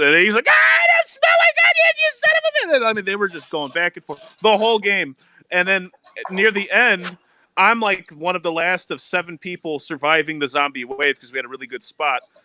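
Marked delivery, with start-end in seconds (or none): 0.5-2.9 very high, loud, furious scream. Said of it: "this kid just lost his fucking mind".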